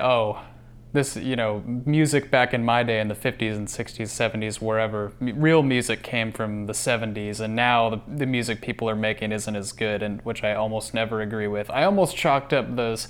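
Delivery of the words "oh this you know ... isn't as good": usual speaking voice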